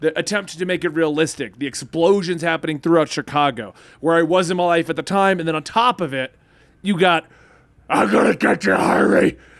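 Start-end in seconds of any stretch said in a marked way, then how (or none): 7.9-9.3 gravelly growling voice. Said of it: "a Batman gravelly voice".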